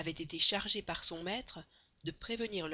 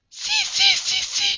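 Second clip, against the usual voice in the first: very high, very loud, very slow drawn-out cry; 16 dB louder than usual. Narrator reads the servant contradicting his master, crying out. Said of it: "s'écria Passepartout".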